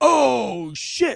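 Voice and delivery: put-on shocked gasp. Retelling a speeder's look back while driving past: imitating a shocked mouth-open "oh shit". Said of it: "mouth open".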